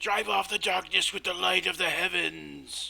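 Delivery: hoarse, rough, high-pitched yell. Voicing a zealot crowd member urging on the flames: yelling. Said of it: "another one yells".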